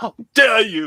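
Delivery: fiery, indignant, fire-in-the-belly outrage. Showing how to deliver a Swedish teen's line, mock fiery outrage. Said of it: "you gotta get that fire in your belly".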